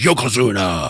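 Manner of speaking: quick, rattled-off delivery. Imitating how a wrestler says a name: imitating Undertaker's quick delivery. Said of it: "quickly says".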